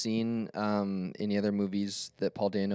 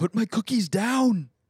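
very high, loud, drawn-out slow scream; 12 semitones higher, 7 dB louder than usual. Saying what the actor is known for, imitating Arnold Schwarzenegger screaming. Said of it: "I only know him for screaming".

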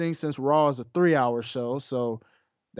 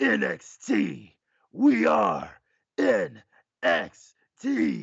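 raspy put-on wrestler voice, higher pitched; 5 semitones higher than usual. Retelling a wrestling promo cut on the mic: raspy Triple H voice. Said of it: "I try to do my best raspy Triple H voice impression".

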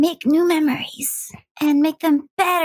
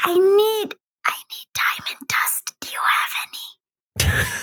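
whispered character voice, pitched higher; 5 semitones higher than usual. Playing Penelope, who runs over to Akira to ask her something, Penelope whispering. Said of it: "kind of like whisper in her ear".

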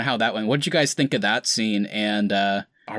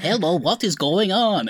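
exaggerated, bad, fake Russian accent, high; 9 semitones higher than usual. Recalling how Wanda used to sound, in Wanda Maximoff's fake Russian accent. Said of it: "they like made up their really terrible Russian accents".

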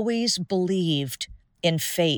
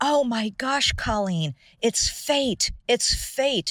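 high, thrilled, excited scream; 5 semitones higher, 3 dB quieter than usual. Retelling how a friend screamed on seeing a license plate: imitating a friend screaming. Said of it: "my friend starts screaming".

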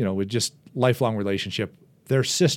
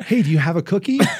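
put-on high-pitched childlike voice from a grown man; 8 semitones higher, 3 dB louder than usual. Voicing what the big dog Seymour seems to say: man-child voice. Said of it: "he just says it in this man child voice".

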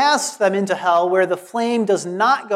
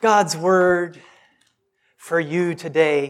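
mocking radio-announcer delivery; 3 semitones lower than usual. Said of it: "I'm mocking".

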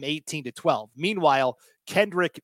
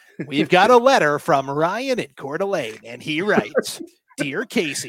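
put-on radio dj voice, louder; 5 dB louder than usual. Playing the hits, one host reads a listener letter in a Casey Kasem radio DJ voice. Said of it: "We're going radio DJ Skaggs".

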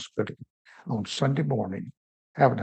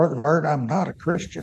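mock forceful, raised voice, pushing up; 3 semitones higher than usual. Retelling a father repeating his words to a visitor, imitating a raised voice. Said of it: "Then he raised his voice and kind of pushed up".

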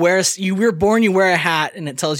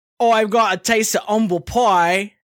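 put-on London Cockney accent; 4 semitones higher than usual. Explaining where a saying comes from, demonstrating it in a cockney accent. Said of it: "if you've got like a Cockney accent and you say".

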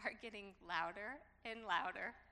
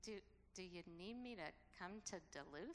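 barely-there, hushed, very quiet voice; 3 semitones lower, 9 dB quieter than usual. Retelling their own question to her: really quiet voice. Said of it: "in a really quiet voice".

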